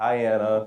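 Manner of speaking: dull, level monotone with no inflection. Imitating someone saying hi to anna, flat monotone. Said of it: "It's a monotone, like".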